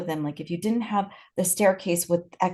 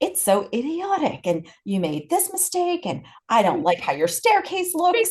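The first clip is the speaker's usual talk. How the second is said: put-on angry scream, pitched higher; 7 semitones higher than usual. Retelling a program officer's letter rejecting a library plan: imitating Bertram screaming. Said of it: "screaming at them and saying".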